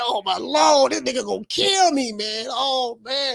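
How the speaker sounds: acted-out slow sobbing, crying through the words. Retelling being scared of punishment as a child: retelling own past crying. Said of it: "I was crying".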